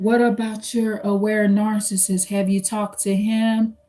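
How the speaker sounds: low, calm, sly, hushed, even voice. Retelling how a relative asked about another relative, imitating her low voice. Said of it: "in a low voice".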